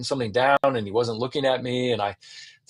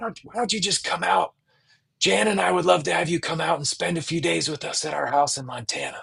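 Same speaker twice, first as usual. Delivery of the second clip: scratchy, high-pitched voice; 5 semitones higher than usual. Retelling Eugene's phone invitation to his house in Montana, in Eugene's chain-smoker-like voice. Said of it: "So he sounded like this".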